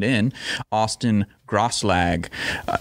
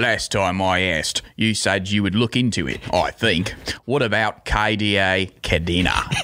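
light put-on Cockney accent, rushed, slipping toward Australian. Speaker reads a donated message aloud with a little bit of cockney accent. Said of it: "read this one with a little bit of a Cockney accent".

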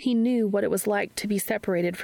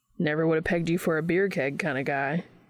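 ordinary delivery, nothing marked

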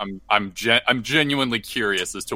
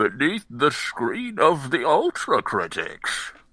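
put-on swooping, old-timey elderly man voice; 4 semitones higher than usual. Opening a new episode of the show, failed Bane impression.

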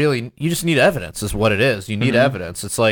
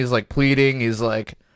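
ordinary talk, nothing marked

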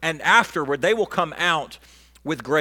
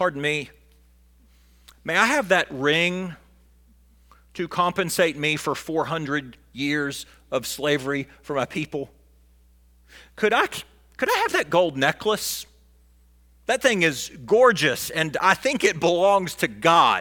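ordinary talk, nothing marked

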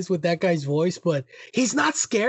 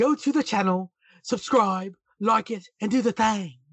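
laid-on, exaggerated, very posh British accent; 3 semitones higher than usual. Imitating a reaction-video creator's sign-off to viewers, in a posh british accent. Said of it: "he's got a very posh British accent, talking like this".

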